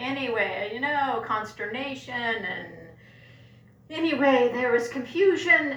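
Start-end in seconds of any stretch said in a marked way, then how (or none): none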